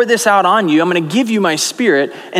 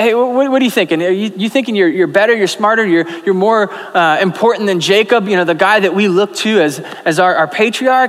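ordinary delivery

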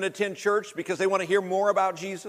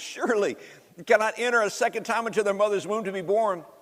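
ordinary talk

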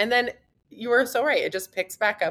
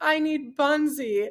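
mock, tearful, high, crying little child's voice; 7 semitones higher than usual. Quoting their young daughter who had a rash: imitating a crying child. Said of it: "she's like crying".

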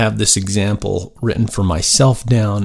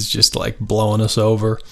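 usual speaking voice

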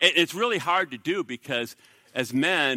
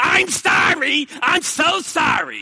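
very high, very slow, drawn-out, insincere, sarcastic; 12 semitones higher, 7 dB louder than usual. Showing how not to apologize to a wife: sarcastic fake apology. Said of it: "I'm not saying sarcastic".

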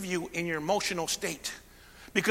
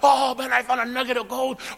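mock-excited voice, louder; 6 semitones higher, 5 dB louder than usual. Speaker acts out a miner finding a gold nugget: acting out an excited miner. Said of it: "he gets all excited".

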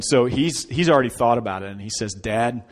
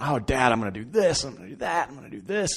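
put-on eager, excited childlike babble; 2 semitones higher, 5 dB quieter than usual. Retelling his son's answer about the new tent: imitating an excited child. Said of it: "he's so excited".

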